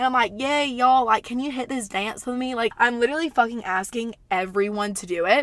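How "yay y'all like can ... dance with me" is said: put-on tipsy-sounding Southern accent slipping out. Retelling asking strangers to dance while dizzy: imitating own dizzy southern voice. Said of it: "I don't know why my voice gets so southern".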